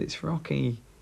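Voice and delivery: small, sweet, little voice. Retelling what a sick little boy said in hospital: imitating a little sweet voice. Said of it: "in his little sweet voice".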